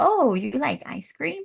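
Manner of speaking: scornful, disapproving, high, shaming, mocking tone. Showing how someone who disagrees might reply, in a shaming tone. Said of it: "That's a shaming tone of voice".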